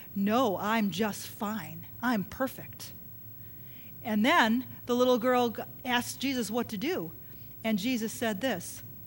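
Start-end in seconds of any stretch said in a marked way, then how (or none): 0.2-2.9 mock-smug, lower and slower. Retelling a story where an atheist answers an offer of prayer: mock-smug. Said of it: "the atheist was real smug".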